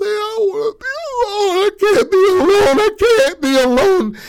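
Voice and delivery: put-on very high, bawling, wailing, tearful sobbing. Retelling a woman's breakdown as she grabs onto another woman, imitating someone bawling. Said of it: "starts bawling, crying".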